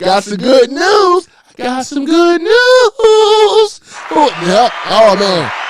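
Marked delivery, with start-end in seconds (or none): 0.0-3.8 squeaky, very high cartoon character voice. Joking about good news in a Family Guy character voice: Mister Herbert voice. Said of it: "Mister Herbert? I remember that on Fa-, Family Guy".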